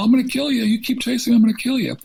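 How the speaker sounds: mock very high, piercing yell. Retelling a robber's threat while chasing him: imitating someone yelling. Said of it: "he's yelling".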